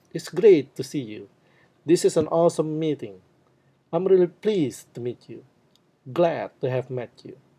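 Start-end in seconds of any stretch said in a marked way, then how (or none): 0.1-1.3 loud, emphatic, high-pitched stress on "great". Greeting phrase example, loud high stress on great. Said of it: "you pronounce them loud. You put stress in those words. You use your high pitch".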